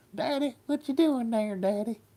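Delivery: very high, dusty southern accent in a dog voice. Speaker gives their Great Pyrenees a voice, a dusty southern dog voice. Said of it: "That's my dusty voice for my dog".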